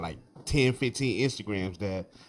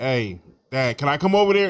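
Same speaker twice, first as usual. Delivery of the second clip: playful, half-kidding, joking, high and loud; 5 semitones higher, 7 dB louder than usual. Retelling how a son asked to join on the couch: imitating Carter asking jokingly. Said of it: "he's saying it jokingly".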